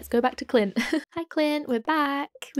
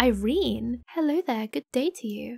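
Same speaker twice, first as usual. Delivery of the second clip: posh, upper-class put-on voice. Meeting the character Irene, voicing her in a posh voice. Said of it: "I'm giving her a posh voice".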